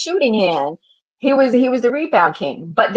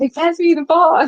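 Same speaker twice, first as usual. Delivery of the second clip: play-acted sobbing, high-pitched, blubbering fake crying; 6 semitones higher than usual. Mocking how the other speaker quoted a player: mock crying as Ron Artest. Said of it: "like Artest was like crying".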